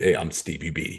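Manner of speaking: very low, cool radio presenter voice. Introduce the presenter by showing how he talks, in Stevie B's cool radio voice. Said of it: "Stevie B talks like this".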